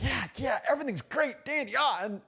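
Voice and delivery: fake cheerful gushing. Mocking competitors who put on a fake smile, imitating fake cheerfulness. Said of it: "They got that fake smile and they're like".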